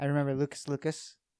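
ordinary talk

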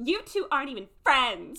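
put-on loud, snippy, childish taunting voice. Retelling what a character said on a show, imitating a ten-year-old on a playground. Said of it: "like a ten-year-old on a playground".

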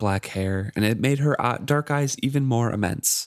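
plain reading voice

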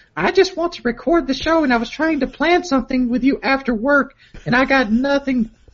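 high-pitched put-on girly voice. Reading aloud a message she sent him, the speaker does a girly voice. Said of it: "Could you do a girly voice for this part?".

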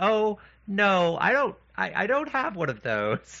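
acted, high, swooping voice stifling a laugh. Retelling the speaker's mother answering a child's remark, imitating her holding back a laugh. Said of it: "very like trying not to laugh".

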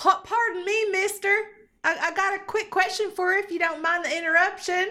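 high, projected yelled call. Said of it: "So you're just yelling across the way".

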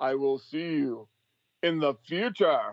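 slow, drawn-out, deliberate, every word weighed. Saying goodbye to everyone: Criswell impersonation. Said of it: "as Criswell would say".

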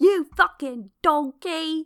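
loud, barked chef voice. Insulting someone named in a podcast shout-out, in a Gordon Ramsay-style insult. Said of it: "insult them in a Gordon Ramsay-esque way".

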